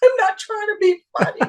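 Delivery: mock almost-crying, near-tearful voice, pitched way up. Retelling pleading with casting to be taken seriously: imitating being almost in tears. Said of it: "I'm almost in tears".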